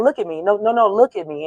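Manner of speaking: ordinary talk, nothing marked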